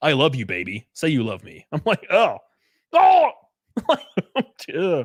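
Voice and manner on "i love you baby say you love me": put-on radio announcer-style voice. Joking about a friend, speaker does Aaron's radio voice. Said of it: "with his like radio voice".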